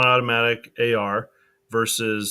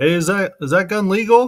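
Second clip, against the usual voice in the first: very high-pitched, raised yell; 10 semitones higher, 6 dB louder than usual. Retelling a joke video where an agent calls out: imitating someone yelling. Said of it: "he's, like, yelling at someone".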